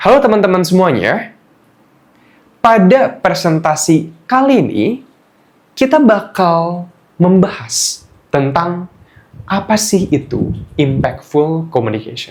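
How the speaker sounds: slow delivery, short phrases split by pauses. Demonstrating impactful communication as a presentation opening, slow with silent pauses. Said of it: "coba kita pelanin. Jadi kayak gini".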